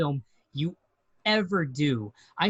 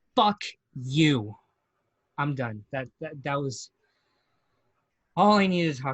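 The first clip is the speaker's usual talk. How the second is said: trembling, shaken voice, shaking with emotion; 3 semitones lower than usual. Finishing a speech aimed at the movie's maker, shaking with emotion. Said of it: "I'm shaking right now".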